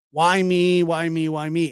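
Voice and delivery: slow, aggrieved, upset lamenting tone. Recalling what he always used to say when upset: imitating someone upset. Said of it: "he would get really upset about stuff".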